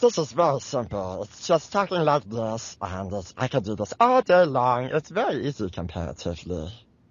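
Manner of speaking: fake cute little creature voice. Asked how they voiced Stitch in the anime, the speaker demonstrates: Stitch voice. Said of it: "That's so cute".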